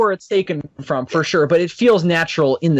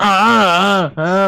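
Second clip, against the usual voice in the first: put-on monster grunts, higher pitch, much slower; 3 semitones higher than usual. Describing old sixties monster sound effects to viewers, making Godzilla love grunts. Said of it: "those little love grunts".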